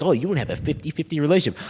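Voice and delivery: put-on sneering, condescending, patronizing talking-down delivery. Showing how people hear his own words: imitating a condescending tone. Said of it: "people think I'm saying it in, like, a condescending way".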